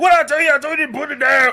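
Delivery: piercing, shrill, very loud, high scolding scream. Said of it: "she yelled like [name]".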